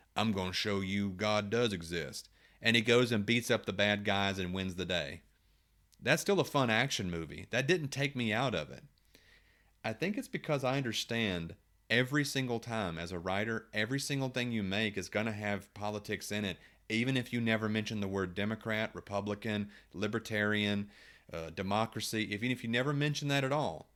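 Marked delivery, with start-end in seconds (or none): 0.2-2.3 put-on rough Southern accent, voice clearly shifted. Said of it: "in a rough Southern accent".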